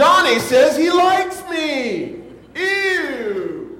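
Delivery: very slow, loud, high, drawn-out yell, disgusted. Telling a story, the speaker acts out a girl retelling a yell to the playground. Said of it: "she yells to the whole playground".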